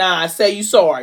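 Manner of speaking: ordinary talk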